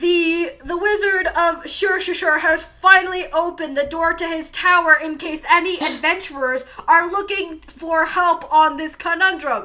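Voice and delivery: very loud, high-pitched town-crier bellow, screamed. Voicing a courier at a fountain announcing news: screaming at the top of his lungs. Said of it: "at the top of his lungs from this fountain, screams".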